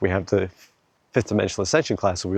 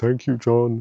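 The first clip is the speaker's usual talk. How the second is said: silly, funny talking-tree voice; 3 semitones higher than usual. Saying goodbye to a tree, voicing the tree's reply in a funny tree voice. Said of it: "it's like doing a funny voice".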